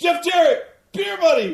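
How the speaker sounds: very loud high yell. Acting out a wrestler screaming off script: Ric Flair impression. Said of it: "he was like".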